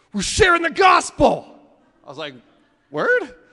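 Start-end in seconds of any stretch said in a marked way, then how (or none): 0.2-1.5 very loud, high-pitched half shout. Retelling what a man with a rude sign told him, retelling a half shout. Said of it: "half shouts at me".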